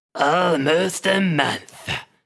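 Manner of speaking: rough, gruff voice. Narrator voicing a man answering the listener, in a gruff voice. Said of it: "the man says in a gruff voice".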